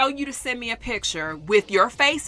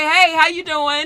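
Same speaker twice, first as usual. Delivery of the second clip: mock courteous, well-mannered tone; 7 semitones higher, 7 dB louder than usual. Retelling how a man greeted the speaker on a call: imitating a polite greeting. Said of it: "Like, all polite".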